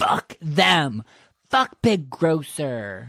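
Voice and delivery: angry, seething, drawn-out, very slow delivery. Voicing a character reacting with anger to a big grocer image: angry. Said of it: "his face gets angry".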